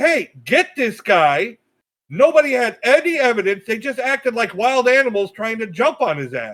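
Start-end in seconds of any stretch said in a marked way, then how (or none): 0.0-1.6 put-on yelling. Retelling what people in the videos did: imitating people yelling. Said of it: "they're just yelling".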